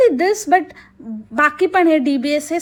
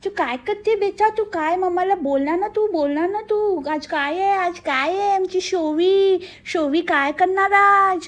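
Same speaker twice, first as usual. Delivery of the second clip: mock lisping, pampering baby talk, higher; 2 semitones higher, 3 dB quieter than usual. Speaker mocks parents talking to their daughter, imitating lisping baby talk. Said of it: "Bobde आहेत आणि त्याच्यामध्ये आणि लाड्या लाड्या बोलत असतात".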